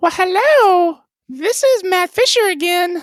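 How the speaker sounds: very high, goofy, silly put-on voice. As an April Fools fake guest, a host uses a stupid put-on voice. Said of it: "I only have one stupid voice".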